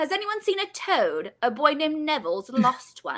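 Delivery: swooping, sing-song little schoolgirl voice. Taking turns sharing favorite impressions, one speaker does a young Hermione Granger impression. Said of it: "Hermione Granger. Baby Hermione".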